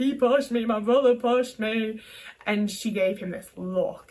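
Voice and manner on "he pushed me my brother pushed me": acted-out sobbing, upset, distressed child's voice. Retelling what they told their mum after getting hurt, imitating crying, distressed. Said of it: "I'm crying my eyes out".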